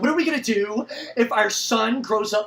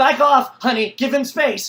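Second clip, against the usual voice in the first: put-on, loud, nagging scolding voice; 3 semitones higher, 6 dB louder than usual. Retelling how the wife nagged during the chaos: imitating wife nagging. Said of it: "And she's like".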